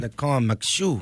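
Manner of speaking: Louisiana Cajun accent. Speaking about cooking down in Cajun country, in a Cajun accent. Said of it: "What kind of accent Cajun is voice".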